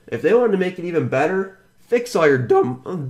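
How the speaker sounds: voice breaks mid-phrase, cracking on "dumb". Ranting about a popular website's changes, voice cracking. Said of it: "voice crack".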